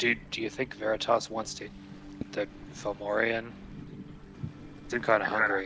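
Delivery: whispered speech. In character during a game, quietly asking a companion a question, in a whisper. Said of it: "I'll whisper like".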